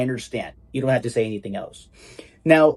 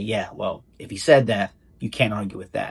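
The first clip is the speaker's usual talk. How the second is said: sardonic, mock-agreeing sarcastic tone; 4 semitones lower than usual. Showing learners how to use the phrase when replying to a friend: sarcastic. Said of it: "So it's a sarcastic way of saying".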